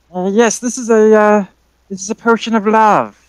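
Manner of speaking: put-on high old lady crone voice. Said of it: "the old lady voice".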